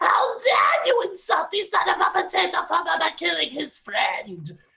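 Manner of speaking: abrupt, very high, outraged furious scream. Voicing Puff the potato farmer charging after his friend is slain: screaming in character. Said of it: "and screams".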